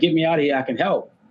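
play-acted, mild, half-yelled tone. Retelling a comic plot, the speaker acts out a prisoner yelling at the guards. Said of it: "he's like yelling at the guards".

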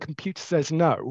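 ordinary talk

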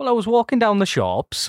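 put-on Welsh accent. Urged by the others to have a go, trying a Welsh accent. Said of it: "Anyone want to do a Welsh accent?".

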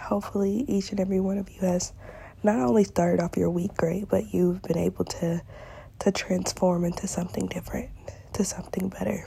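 sick, half-whispered voice.

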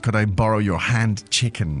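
ordinary talk

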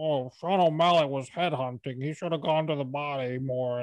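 mocking, derisive troll-like voice. Discussing a fight, speaker mocks armchair critics with a troll voice. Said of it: "I'm going to do the troll voice".

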